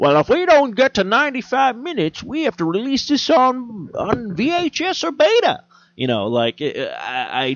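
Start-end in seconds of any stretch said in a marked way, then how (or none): 0.0-5.6 put-on very high, cranky, crotchety old-man voice. Imitating movie producers explaining the runtime: imitating an old crotchety guy. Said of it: "Why do they sound like an old crotchety guy?".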